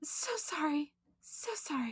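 high, soft whimper with fake crying. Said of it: "that's how she said".

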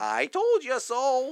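very high-pitched wicked storybook witch voice. Chatting with friends, dropping into a Wicked Witch of the West voice. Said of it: "That's my Wicked Witch of the West voice".

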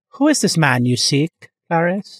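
sinister film-villain voice. Joking about some heavy breathing: Hannibal Lecter impression. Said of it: "it's so Hannibal Lecter".

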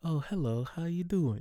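put-on sugary, syrupy-sweet voice, pitched high. Retelling how the same customer then greeted the speaker: imitating a sweet voice. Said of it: "With the sweetest voice".

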